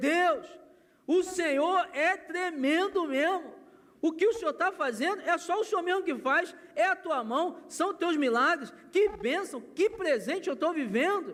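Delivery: high, slow, overjoyed, ecstatic delivery.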